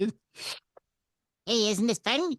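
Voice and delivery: put-on cartoon mouse voice. Recalling a bright, bubbly woman, the speaker acts out her Mickey Mouse voice. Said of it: "She was going to talk in a Mickey Mouse voice".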